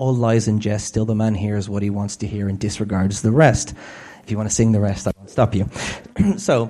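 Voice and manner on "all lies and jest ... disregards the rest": ordinary talk, nothing marked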